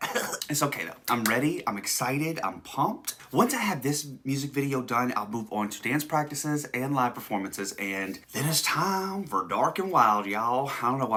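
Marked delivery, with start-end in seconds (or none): 7.8-10.7 put-on slow, drawling country accent. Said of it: "I'm saying it in a country accent".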